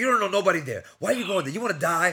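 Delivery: put-on furious outburst. Retelling the speaker's dad's reaction, imitating a furious dad. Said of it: "he gets furious".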